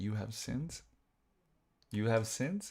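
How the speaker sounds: put-on hushed Romanian accent. Imitating the priest at communion speaking to kids, Romanian accent. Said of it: "in his Romanian like accent".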